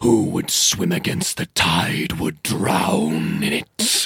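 rough, creaky elemental voice rippling as through water. A narrator voices a summoned water elemental speaking to the players: Mermaladon's rippling watery voice. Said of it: "this voice just ripples through the water around you".

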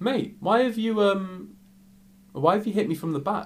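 put-on calm, unbothered tone. Retelling a bar fight, quoting own calm reply to the attacker: imitating own calm reply. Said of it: "so calm".

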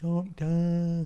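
mock shouting. Imitating a character banging on a window, calling out: Donna Noble calling through a window. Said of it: "a Donna Noble place now where she bangs on the window".

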